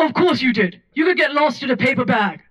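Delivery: put-on old-fashioned voice, high and swooping. Retelling the dinner host scolding the speaker's mom for arriving late, old-timey Charlotte voice. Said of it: "She has an old-timey voice".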